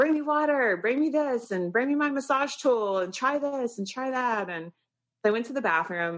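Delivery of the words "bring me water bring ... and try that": put-on high, demanding yelling. Retelling calling to her husband from the bathroom: imitating own yelling. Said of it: "And I'm yelling for him".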